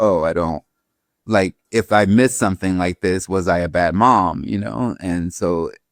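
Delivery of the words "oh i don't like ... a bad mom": plain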